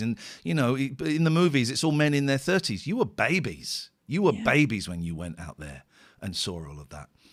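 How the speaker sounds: usual speaking voice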